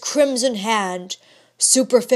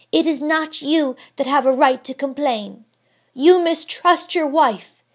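steady, unyielding, firm delivery, pitched up; 6 semitones higher than usual. Narrator voicing Georgiana answering her husband, firmly. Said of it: "with the firmness of which she possessed no stinted endowment".

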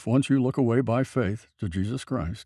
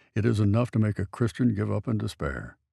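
ordinary delivery

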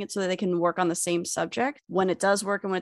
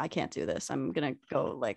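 low, soft mocking delivery. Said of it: "And then you were like".

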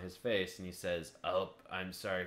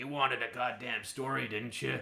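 put-on mean, grumpy old man voice, pitched higher; 5 semitones higher than usual. Retelling a movie scene, imitating a mean grandpa. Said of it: "he sounds so mean".

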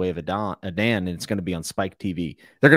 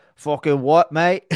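bad, fake Australian accent, pitched up; 8 semitones higher, 4 dB louder than usual. Asked to do a bad Aussie accent, the speaker tries one: bad Australian accent. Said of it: "Every time I think of Aussie accent".

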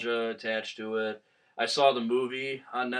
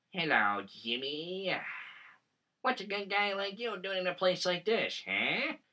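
pitched-up ventriloquist dummy voice; 7 semitones higher, 6 dB quieter than usual. Describing a childhood fear, mocking the voice: imitating Slappy the Dummy's voice. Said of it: "I actually can mock him".

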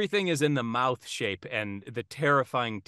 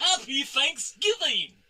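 squeaky, very high put-on clown voice; 13 semitones higher than usual. Playing the clown voice challenge, showing what a clown sounds like, clown voice. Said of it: "this is what I think a clown sounds like".

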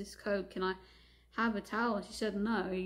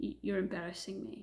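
imitated muttering under the breath. Retelling what a father said on arriving: imitating someone muttering under breath. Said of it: "says under his breath as he smiles".

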